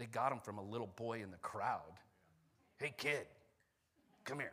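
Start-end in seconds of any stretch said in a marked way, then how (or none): 2.8-4.5 creepy, unsettling put-on voice. Acting out the disciples calling a little boy in the crowd, creepy voice. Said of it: "you don't read creepy voices".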